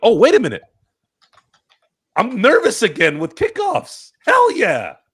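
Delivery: excited, high, loud, thrilled outburst.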